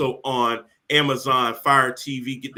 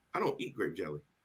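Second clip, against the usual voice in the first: hushed, very quiet, plain matter-of-fact delivery; 8 semitones lower, 15 dB quieter than usual. Retelling her reply in the grocery store: imitating a matter-of-fact tone. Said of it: "in a matter-of-fact tone and says".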